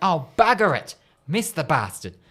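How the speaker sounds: play-acted small, mild, held-back yell in priest voice. Telling a joke, the priest misses a putt: acting out a priest's yell. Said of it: "he misses, and he yells out".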